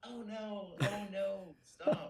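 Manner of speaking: put-on, very high, overplayed, helpless pleading distress. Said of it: "And he's like".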